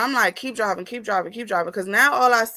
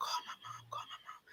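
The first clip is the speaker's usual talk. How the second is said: very quiet, barely voiced hushed whisper. Retelling asking a cousin to call mom: retelling a whisper. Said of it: "I whispered, like, with my mouth to my cousin".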